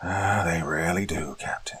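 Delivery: tired, gravelly, slow voice. Reading a general's reply to a captain in a story: tired, gravelly voice. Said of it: "in a tired, gravelly voice".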